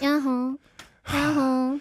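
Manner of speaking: soft, trailing, drooping, casual "yaho". Contrasting with the classic greeting: soft, trailing 2026-style yaho. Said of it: "이천이십육 버전 야호는".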